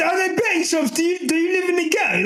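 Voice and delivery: high-pitched, mocking shouted tone.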